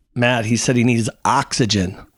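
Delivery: ordinary delivery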